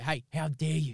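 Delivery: mock angry scolding tone. Retelling scolding a five-year-old, imitating own angry telling-off. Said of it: "I got to give him a real fucking go".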